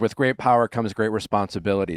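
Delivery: ordinary talk, nothing marked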